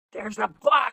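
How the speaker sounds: high, urgent, panicky call. Retelling how the truck driver called out: imitating a panicked voice. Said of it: "in a panicked voice, he's like".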